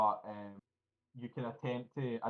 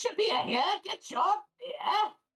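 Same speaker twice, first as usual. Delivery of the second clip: very high, spliced-together parroting voice, like a record; 6 dB louder than usual. Narrating a scene, voicing the Kenku serving guests, in a Kenku voice like a record. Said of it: "we sound like a fucking record".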